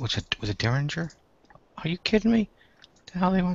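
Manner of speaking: very high, soft muttering mumble. Someone online with an audience, talking to himself: mumbling to himself. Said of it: "I'm I'm mumbling".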